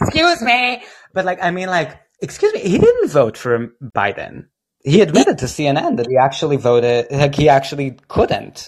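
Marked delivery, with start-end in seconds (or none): 0.0-4.5 animated, pitched-up talk-show voice with swooping pitch. Arguing about a candidate's vote, doing Meghan McCain on The View. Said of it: "like Meghan McCain in The View".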